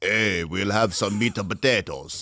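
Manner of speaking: put-on Yugoslavian accent. Imitating ordering at a restaurant with parents: imitating a thick Yugoslavian accent. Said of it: "we speak with a thick accent".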